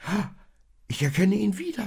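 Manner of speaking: very high, wonder-struck, amazed cry. The donkey in the stable watches the star grow brighter, amazed. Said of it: "staunte der Esel".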